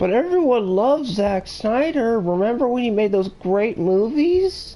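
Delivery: mocking sarcastic tone. Discussing a film director, the speaker makes a remark, sarcastic. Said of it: "I'm being sarcastic".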